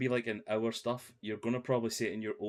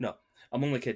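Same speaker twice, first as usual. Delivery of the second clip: ordinary talk, nothing marked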